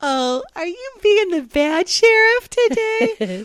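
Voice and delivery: very high, sugary-sweet, drawn-out cooing voice. Retelling how he talks to the aggressive dog, highest-pitch, sweetest voice. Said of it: "In the highest pitch, sweetest voice".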